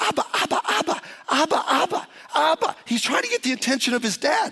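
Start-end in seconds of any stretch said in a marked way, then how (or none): 0.0-2.8 put-on high, wound-up child's yell, over and over. Retelling a wound-up four-year-old on a plane calling his dad, imitating a child yelling. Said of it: "he is yelling at the top of his lung".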